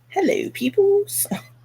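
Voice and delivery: put-on British accent. Greeting the livestream viewers for fun in a put-on British accent. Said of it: "That's [name]'s British accent".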